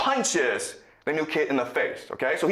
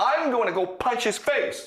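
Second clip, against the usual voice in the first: put-on hot-headed angry bully voice, pitched up; 8 semitones higher than usual. Retelling a story about a bully and a new kid, quoting the bully mock-angry. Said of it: "the bully gets really angry and says".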